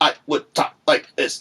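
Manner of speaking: choppy staccato delivery. Contrasting smooth and separated tones, the speaker demonstrates very staccato speech. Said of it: "suddenly make it very staccato".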